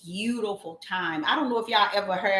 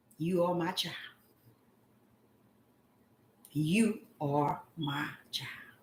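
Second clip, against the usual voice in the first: small, soft, hushed voice, much quieter; 3 semitones lower, 7 dB quieter than usual. Speaker retells what the Father said to a sorry child, in a small, quiet voice. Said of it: "with a small, quiet voice".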